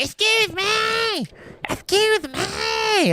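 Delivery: shrill screech, very high and slow, stretching "me". Retelling how Vickie Guerrero comes out: screeching Vickie Guerrero impression. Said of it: "so screeching of the ears".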